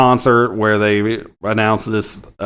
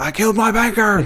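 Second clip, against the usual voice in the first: very high, raw, comic hollered yell; 11 semitones higher than usual. Retelling a movie scene where a voice yells a confession: Sam Kinison yelling. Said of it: "yelling things like".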